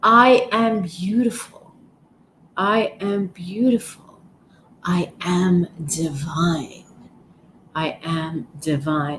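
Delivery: slow, heartfelt delivery, feeling every word.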